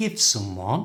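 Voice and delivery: rising pitch across "give someone". Splitting an idiom into two parts to say it naturally: rising pitch on give someone. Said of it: "The first part is said with a rising pitch, like this".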